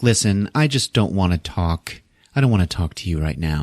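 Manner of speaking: usual speaking voice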